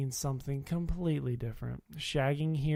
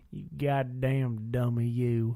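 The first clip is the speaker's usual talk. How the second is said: put-on strong rural Virginia southern hillbilly accent; 2 semitones lower than usual. Talking about virginia accents, the speaker imitates relatives who talk in a hillbilly accent. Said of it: "I got people in my family that talk like this".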